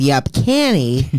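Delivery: low character voice, dropped down in pitch.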